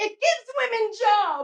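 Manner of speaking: high, muddled, confused, self-righteous woman's voice. In a made-up segment, doing an impression of a confused, self-righteous woman. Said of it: "Really confused, self-righteous woman speaking out on pornography".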